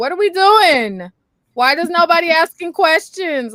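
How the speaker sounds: very loud, high-pitched scream. Retelling a reaction to a TV show: retelling screaming at the screen. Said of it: "screaming at the screen".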